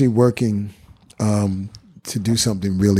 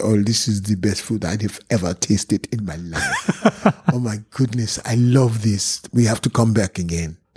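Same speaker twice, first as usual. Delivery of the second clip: put-on French accent in English. Quoting the man he took to a bronx restaurant, imitating a french accent. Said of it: "his French accent was so, he said".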